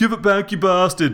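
high-pitched shouted yell. Reading Rog's line to his brother Reg as he chases him, yelled. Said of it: "Rog yelled".

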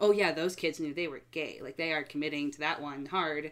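normal talking voice

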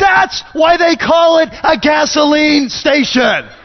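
loud, slow, glaring-sounding voice.

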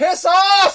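very high-pitched, loud, shrill holler. Shouting at kids playing right outside the window: yelling. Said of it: "I'm only yelling that".

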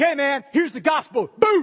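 loud forceful blast. Imitating someone sharing the gospel, like a force of nature. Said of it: "Like a force in nature".

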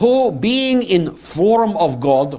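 put-on Russian accent. Reading the passage aloud as it really reads, in an imitated russian accent. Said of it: "I am going to read to you with my best attempt at Russian accent".

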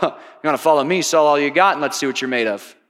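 low, snarky delivery with a laugh.

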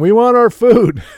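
mock high-pitched, demanding holler. Retelling family members yelling for dinner during the game: imitating family yelling. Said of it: "my family's yelling".

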